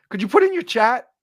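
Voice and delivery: cracked voice breaking mid-line. A host welcomes everybody and asks them to post in the chat, voice cracking. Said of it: "my my voice just cracked like I'm thirteen years old".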